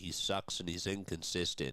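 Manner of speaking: ordinary talk, nothing marked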